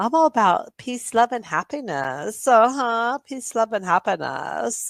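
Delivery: put-on high-pitched California hippie accent. Imitating Capio floating among other channels: California hippie accent. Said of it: "California hippie accent".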